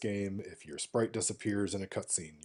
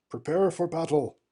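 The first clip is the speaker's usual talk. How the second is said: loud, high-pitched bellowing voice; 9 semitones higher, 9 dB louder than usual. Reading a game scene's dialogue aloud, giving the captain a Cecil voice. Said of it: "this voice for Cecil".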